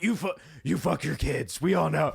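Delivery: rough, creaky superhero growl.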